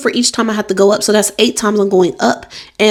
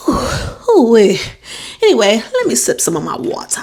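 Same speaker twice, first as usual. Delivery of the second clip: breathless, out of breath. A pregnant speaker, talking to viewers, pauses to sip water while out of breath. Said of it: "And I am out of breath".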